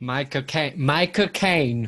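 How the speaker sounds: put-on Cockney accent. Echoing the other speaker's bit: Michael Caine Cockney accent. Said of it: "in his Cockney accent".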